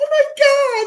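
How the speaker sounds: put-on very high, very loud, shrill, giddy overexcited shriek. Retelling how the other speaker reacted to a fighter's entrance music: imitating someone overexcited. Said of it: "He's creaming in his pants".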